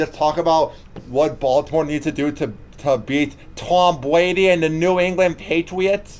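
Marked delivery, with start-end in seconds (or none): 3.6-6.2 clumsy, badly done put-on Boston accent, pitched up. Talking football during a show segment, in a bad boston accent. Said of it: "now that was my bad Boston accent".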